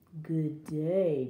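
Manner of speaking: low, wolf-like growl. Narrator reading a hungry wolf greeting a girl in the woods: growled. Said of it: "growled the wolf".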